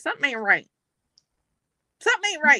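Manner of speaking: frazzled, worried, rushed, flustered, repetitive fretting. Retelling what a worried man keeps saying: imitating a flustered voice. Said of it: "He's, like, flustered".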